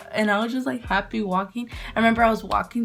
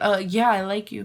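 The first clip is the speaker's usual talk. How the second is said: ordinary talk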